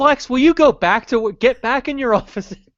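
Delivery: high exasperated tone.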